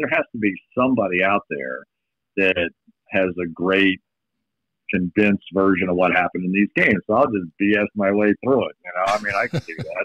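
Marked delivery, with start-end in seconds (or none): none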